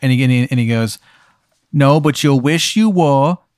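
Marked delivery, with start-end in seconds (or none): 1.7-3.3 put-on voice like a little kid. Retelling a scene where Beelzebub answers a man asking if he's a ghost, Beelzebub's child voice. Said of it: "Beelzebub speaks in like a child's voice".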